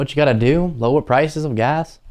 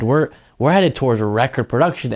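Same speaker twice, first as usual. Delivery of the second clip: normal talking voice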